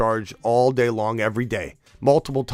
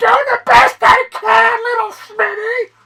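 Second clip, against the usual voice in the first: shrill, raised, loud, high-pitched voice; 9 dB louder than usual. Retelling what Mom said to the speaker as a young kid: imitating a loud, high-pitched voice. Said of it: "in a real loud, high-pitched voice".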